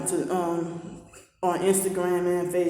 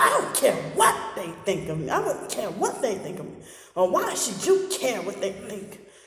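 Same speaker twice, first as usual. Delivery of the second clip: mock nasty, dismissive, mean, aggressive, swooping delivery; 3 semitones higher than usual. Retelling how people dismiss being told of abuse: imitating someone saying it meanly. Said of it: "You say it in a way that's mean, aggressive".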